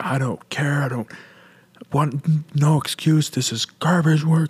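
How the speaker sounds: furious, livid yelling, high-pitched. Recounting being yelled at in front of the crew, the speaker is retelling a livid yell. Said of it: "he was just livid and just yelling at me".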